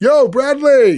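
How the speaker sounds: put-on, brash, loud, high-pitched hollered call. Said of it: "It's so fucking loud".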